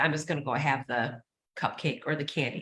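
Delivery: ordinary delivery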